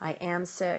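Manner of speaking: ordinary talk, nothing marked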